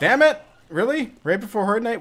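high, rushed, panicked, frantic outburst. Gamer gets a Screaming Screamer right before Horde Night, panicking. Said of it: "and now I'm panicking".

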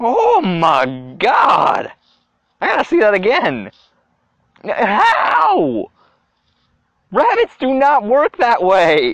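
speaking through laughter. Reacting to a replayed clip of a rabbit hit by a car, laughing while talking. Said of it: "I'm laughing".

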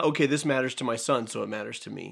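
ordinary delivery

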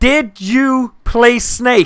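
very slow, drawn-out speech. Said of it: "I'll do it slowly".

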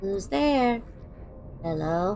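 low put-on gun turret voice. Explaining a choice of voice, doing a Portal turret voice. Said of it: "I can do a good impression of them".

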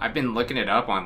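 usual speaking voice

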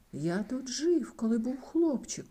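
exclaiming aloud. Arriving in a village with a ghost, a man speaks, exclaiming. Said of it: "вигукнув Скрудж".

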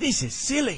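angry, impatient. Reading a children's story, one character objects to the others: angrily. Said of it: "said Hootie angrily".

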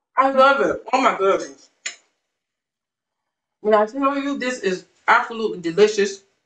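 talking with mouth full. Eating a dish on camera and reacting out loud, talking with mouth full. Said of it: "I'm trying to talk and eat at the same time".

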